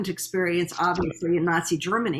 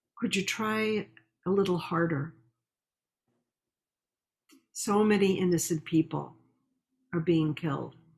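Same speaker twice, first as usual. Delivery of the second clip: mild, gentle, soft-spoken tone; 3 dB quieter than usual. Quoting what his father said in reply, in a gentle, soft voice. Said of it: "in a very gentle and soft voice".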